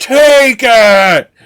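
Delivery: shrill, booming, very high, very loud yell. Recount a scene where a man with a cross confronts Malasar, imitating a character yelling. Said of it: "he keeps yelling at him".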